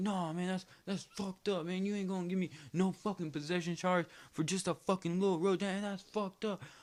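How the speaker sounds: mock angry rant, worked-up and high-pitched. Retelling a friend's outburst at a cop during a traffic stop: imitating a friend going off. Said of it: "going the fuck off".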